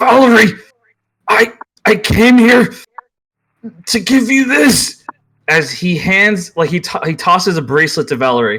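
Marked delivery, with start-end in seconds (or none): 0.0-5.0 pained croak, much higher, slower. Fallen to your knees under a Reaper spell, you speak to Valerie, croaking out in pain. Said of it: "he just croaks out in pain".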